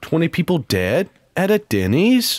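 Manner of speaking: put-on valley girl inflection, lifting at the ends. Mocking someone who always sounds like they're asking a question, Valley Girl inflection. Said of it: "sounded like a Valley Girl".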